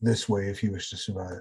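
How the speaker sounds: barely audible, faint, hushed half-whisper. Voicing a huddled figure who guides a player through the sewer: faint half-whisper. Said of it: "You hear the faintest of whispers".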